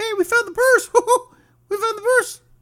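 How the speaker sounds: very high squeaky pitch, barely reaching the note. Retelling a phone call he got yesterday afternoon, in a Mickey Mouse voice. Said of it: "I can't do that voice right now".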